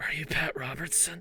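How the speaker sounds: hushed, quiet, barely voiced whisper. Speaker acts out how a woman whispered a question, retelling a whisper. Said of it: "she whispered it like".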